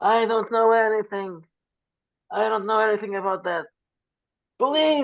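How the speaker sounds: frantic, very high, panicked yelling. A man questioned about a weirdo denies everything, shouting. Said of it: "starts just shouting".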